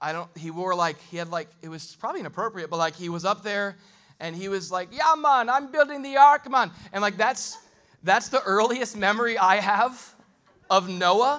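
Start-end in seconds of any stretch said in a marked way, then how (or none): 4.9-6.7 put-on Jamaican accent, much higher and louder. Remembering a play where Noah was Jamaican, imitating Bobby Bemis's Jamaican accent. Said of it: "Noah was Jamaican".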